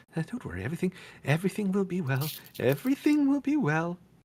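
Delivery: very high, nervous mutter under the breath. The nervous burgomaster, waiting in a chair, reassures the players: muttering under his breath. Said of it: "you kind of hear him mutter and like under his voice".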